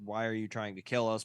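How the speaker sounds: normal talking voice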